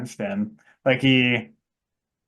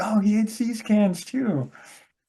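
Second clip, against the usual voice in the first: high-pitched, clueless, oblivious character voice. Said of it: "and he's like".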